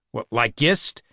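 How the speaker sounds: ordinary delivery, nothing marked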